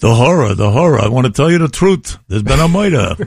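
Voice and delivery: put-on thick, heavy New York accent. Speaker recalling a fellow actor's line in Macbeth, in a Jackie Mason-like New York accent. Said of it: "they had the New York accent".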